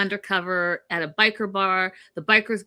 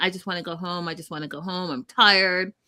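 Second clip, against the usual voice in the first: mock crying in a tearful voice; 2 semitones lower than usual. Retelling how a woman stormed out upset, imitating someone crying. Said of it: "She's like crying".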